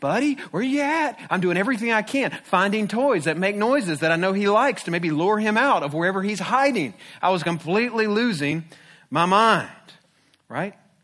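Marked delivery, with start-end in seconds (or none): 0.0-1.2 put-on high, toddler-like voice of a three-year-old. Parent searching for their missing son, calling out, talking like a three-year-old. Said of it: "I'm talking almost like a three-year-old".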